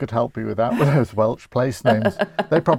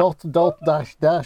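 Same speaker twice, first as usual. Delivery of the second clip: words spoken in a German accent; 3 semitones higher than usual. Joking about saying Morse code in a Birmingham accent, German-sounding accent. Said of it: "you sounded very German then".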